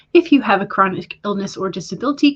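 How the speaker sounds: normal talking voice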